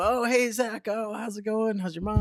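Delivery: high, flustered, awkward, thrown-off voice. Retelling greeting Bobby, who answers thrown off: retelling Bobby's awkward reply. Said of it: "he's just kind of thrown off awkward".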